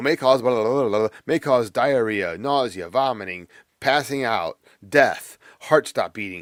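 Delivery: very fast, rattled-off fine-print disclaimer-style read. Mimicking a medication ad listing side effects, in a very rapid disclaimer voice. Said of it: "that person talking very rapidly".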